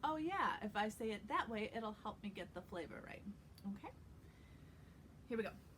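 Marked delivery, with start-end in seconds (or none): none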